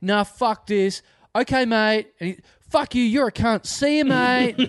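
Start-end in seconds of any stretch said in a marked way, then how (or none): 3.6-4.7 mock patronizing tone, pitched higher. Retelling a man doing catchphrases at someone, in a mock-patronizing farewell. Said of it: "where patronizingly".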